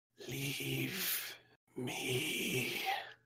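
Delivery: barely audible, very hushed, very soft faint voice. Narrating a voice all the players hear, speaking very softly. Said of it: "You hear very softly".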